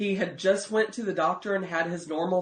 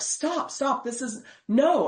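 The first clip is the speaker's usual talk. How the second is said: high, drawn-out, upset, put-on tearful crying; 6 semitones higher than usual. Recounting confronting a man believed to be lying, retelling crying while screaming. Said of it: "I'm crying and I'm like screaming at him".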